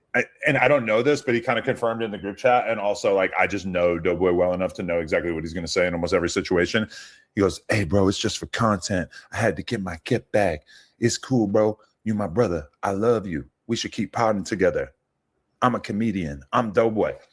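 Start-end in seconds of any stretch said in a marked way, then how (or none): 7.6-17.1 put-on whispering. Retelling what a friend whispered into someone's ear: imitating someone whispering. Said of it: "puts his head down by his ear and whispers".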